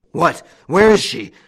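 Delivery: big, loud, shrill, bellowing roar. Old Goussot appears on the scene after his son calls him: roared. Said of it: "roared old Goussot".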